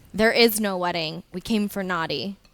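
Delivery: firm, stern, agitated delivery. Answering a creature who asks about a wedding: stern and agitated. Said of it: "I say to him pretty sternly and agitated".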